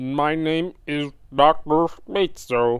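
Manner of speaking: put-on slow, cheesy, bad old computer robot voice. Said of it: "robot voice before. Ro-, that robot voice is really bad".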